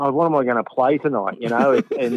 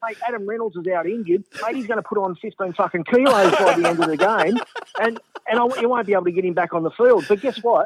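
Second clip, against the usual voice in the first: eager, lit-up, pitched-up and excited; 9 semitones higher than usual. Retelling an interview answer: imitating Anthony, excited. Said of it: "his eyes light up and he goes".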